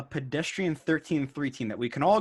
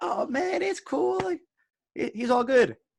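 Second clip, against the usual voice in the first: laid-back, slow, high-pitched drawn-out Southern drawl; 11 semitones higher than usual. Contrasting two quarterbacks' personalities: laid-back Southern drawl as Brett Favre. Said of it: "Brett Favre is that laid-back Southern drawl".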